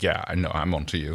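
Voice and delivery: low, threatening, knowing voice. Retelling a scene where one character confronts another: imitating a character's threat. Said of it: "going like".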